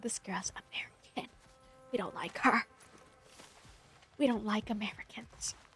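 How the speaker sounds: hushed, indignant angry whisper. Imagining the locals' reaction to her rage bait: imitating angry locals. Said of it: "They're gonna be so angry".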